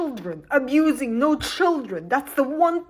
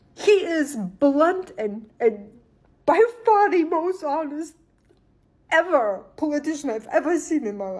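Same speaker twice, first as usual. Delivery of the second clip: crying, tearful voice; 2 semitones higher than usual. Praising a politician they admire, crying. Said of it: "I cannot believe I'm crying".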